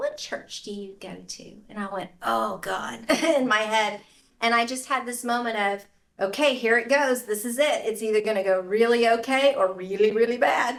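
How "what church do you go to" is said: put-on very quiet, hushed Southern old-lady voice. Retelling what an old woman who delivered a painting asked, in Southern old woman voice. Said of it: "Southern old woman fashion".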